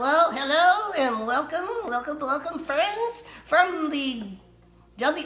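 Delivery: high-pitched ventriloquist dummy puppet voice. A performer tests out a little voice for a puppet character while greeting an audience. ventriloquist dummy voice. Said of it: "let's see if I could give this guy a little voice".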